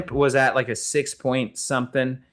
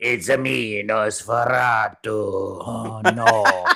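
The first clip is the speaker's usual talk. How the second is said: very slow, dragged-out cartoon voice, "oh" drawn out; 3 semitones lower than usual. Describing a film's vampire who looks like Borat, imitating him: Wario voice. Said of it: "a pretty good Wario impersonation too".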